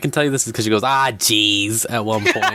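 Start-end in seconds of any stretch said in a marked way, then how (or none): 0.8-1.9 put-on local Massachusetts Boston accent. Retelling what a woman said, to show she has a boston accent. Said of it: "I'm saying she's got Boston".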